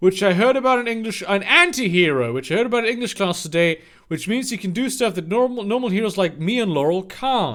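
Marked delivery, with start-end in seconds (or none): none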